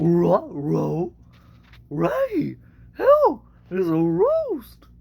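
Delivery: very high, loud, swooping cartoon dog voice. Opening a set of cartoon voices, doing the first one: a Scooby-Doo voice. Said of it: "Here's my first cartoon voice. It's uh, Scooby".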